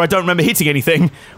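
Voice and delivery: ordinary delivery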